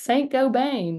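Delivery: joking Texan accent. Jokingly saying the company name Saint-Gobain in a Texas accent. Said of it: "in like the Texas accents".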